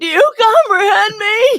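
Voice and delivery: very high, loud yell with voice breaking. Repeating a favorite line of his, imitating the part where his voice cracks. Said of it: "I love that part where his voice cracks".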